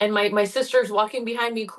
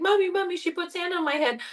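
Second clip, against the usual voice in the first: put-on high, tearful, crying little-kid voice; 8 semitones higher than usual. Retelling running to mommy as a child: retelling own childhood crying. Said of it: "and I was crying".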